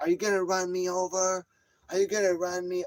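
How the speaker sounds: high screaming, repeating the same words over. Retelling a woman circling on her bike and shouting, imitating her screaming. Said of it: "Is that her in the fuck screaming?".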